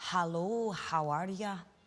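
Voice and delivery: put-on Glaswegian accent. Quoting the phrase your mom's best friend uses, in a glaswegian accent. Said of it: "she's Glaswegian is".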